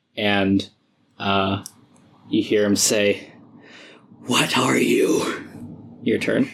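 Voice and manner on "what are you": breathless, panting, gasping between heavy breaths. Narrating combat, voicing him as he speaks, out of breath and panting. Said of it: "he's panting heavily".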